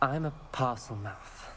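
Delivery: normal talking voice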